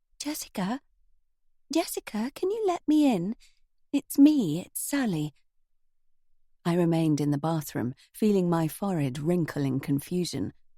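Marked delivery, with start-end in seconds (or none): 0.2-5.3 tiny, reed-thin, very high voice. A visitor calls through the letterbox asking to be let in: tiny reed-thin voice. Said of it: "a tiny, reed-thin voice".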